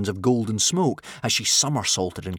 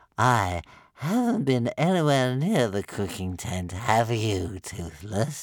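stretched, lazy, drawn-out drawl. A narrator reads a character's reply to a scolding, drawling. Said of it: "drawled Stormfly".

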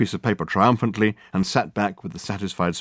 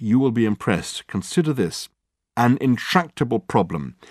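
plain

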